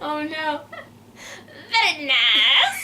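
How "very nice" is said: stretched-out nice in put-on voice. Another speaker has just mentioned Borat, so try out a Borat impression. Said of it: "Or Borat".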